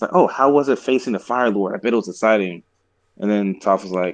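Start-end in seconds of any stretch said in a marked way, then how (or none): none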